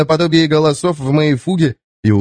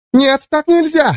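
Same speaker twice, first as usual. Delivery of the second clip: very high, exclaiming cry; 12 semitones higher than usual. A woman backs away as the narrator comes toward her, exclaiming. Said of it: "воскликнула она".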